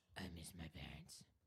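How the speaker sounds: very quiet, hushed masked-vigilante voice. Competing with another speaker over Batman voices, showing his version: Batman voice. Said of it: "Who has the better Batman voice?".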